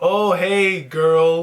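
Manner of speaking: loud, taunting, needling, mocking jokey teasing. Retelling an older man's jokes about earrings: imitating an annoying mocking joke. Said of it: "these annoying jokes".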